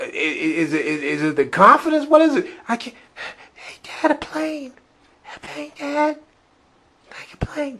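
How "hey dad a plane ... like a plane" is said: tiny, barely audible, very high-pitched voice. Imitating a cast member's sketch line that could not be heard: imitating Brooks Wheelan speaking too low. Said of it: "You're real low".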